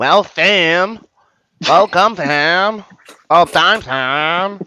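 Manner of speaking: very loud, very slow, drawn out. Retelling how a coworker greets on arrival: imitating a coworker greeting. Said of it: "It's a good impression".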